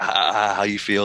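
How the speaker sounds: mock smug, teasing gloat. Retelling an older brother taunting after taking a toy: imitating a gloating taunt.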